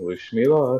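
mumbled, barely committed, passive acted delivery. Voicing a character mumbling to Corby: mumbling in character. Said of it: "passively mumble to Corby and say".

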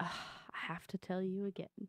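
imitated exasperated tone. Mocking how the other player repeats an answer: imitating an exasperated tone. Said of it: "Why you always say it with such, like".

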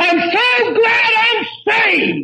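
very high, full-voiced yell at top of lungs. Retelling how he jumped up in bed beside his wife: retelling a loud yell. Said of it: "I yelled at the top of my voice".

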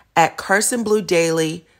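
ordinary delivery

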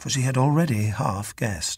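ordinary delivery, nothing marked

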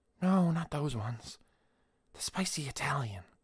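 soft, high, half-asleep dream-talk mumble. A dozing woman answers the narrator's question, mumbling. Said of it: "she mumbled".

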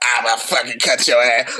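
low, rasping, rough throaty voice. The speaker quotes a woman's threat, imitating her rough throat voice. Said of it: "Her throat fucked up".

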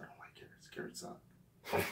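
soft whispered aside.

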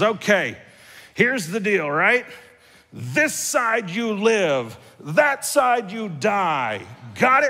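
mock angry voice. Retelling a man gathering the group to warn them, mock-angry warning. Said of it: "tries to put on his best angry voice".

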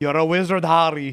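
put-on Scottish-accented delivery. Showing others how to say a movie line, one speaker uses a Scottish accent. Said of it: "That's Scottish".

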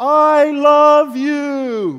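shouting at the top of the lungs, very loud and high. Acting out Jesus on the Mount of Olives: imitating Jesus shouting loudly. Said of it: "he is shouting at the top of his voice".

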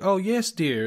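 put-on genteel Southern accent. Recapping a scene: replying to a friend, Kate Hudson southern-accent impression. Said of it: "Kate Hudson doing the southern accent".

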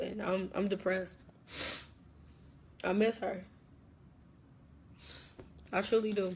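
talking through tears. Telling video viewers how much they miss her, crying while talking. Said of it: "I'm trying to stop crying".

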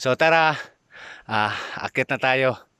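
out of breath. Setting off to help deliver school supplies to children, out of breath. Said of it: "Medyo hinihingal ako".

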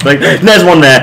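high, loud, startled, panicked shout.

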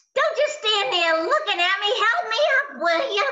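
high, bossy, demanding, spoiled starlet voice. Retelling a fall on stage, answering in character: Lena Lamont voice. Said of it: "she talks like this".

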